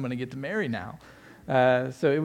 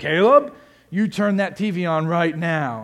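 play-acted, powerful, loud, booming, drawn-out, deliberate commanding voice; 3 semitones higher, 5 dB louder than usual. Retelling how a grandfather ordered a child, imitating a loud booming voice. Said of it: "this loud, booming voice".

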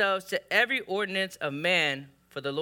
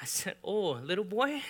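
ordinary talk

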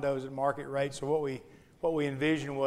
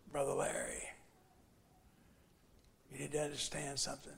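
very hushed, deep, low, rasping gravelly voice; 10 dB quieter than usual. Retelling what Marco said after punching him in the chest, in Marco's deep, gravelly voice. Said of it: "he talked with a real deep, gravelly voice".

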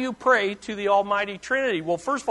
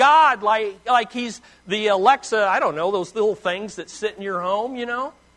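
plain

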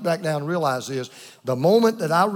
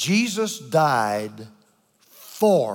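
very slow, deliberate, word-by-word delivery; 5 semitones lower than usual. Summing up the Lord's Supper in one sentence, speaking very slowly. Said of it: "I'm going to say it real slow".

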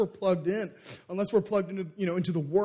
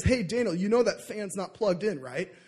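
ordinary delivery

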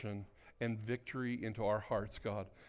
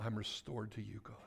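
whispered, quieter; 8 dB quieter than usual. Leading a group in prayer, saying the line along with them: whispering. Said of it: "Just whisper it to him".

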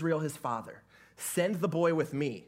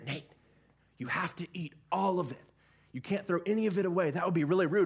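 imitated whisper; 3 semitones higher than usual. Retelling what someone whispered in the speaker's ear: imitating a whisper. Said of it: "whispers in my ear".

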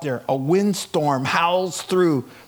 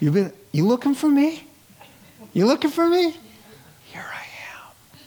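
gentle, soft whisper, higher; 10 semitones higher than usual. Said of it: "with a whisper".

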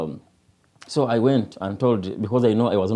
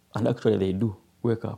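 normal talking voice

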